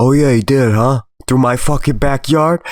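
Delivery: biting, threatening, menacing sarcasm. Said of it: "And he's like".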